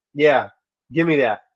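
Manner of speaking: normal talking voice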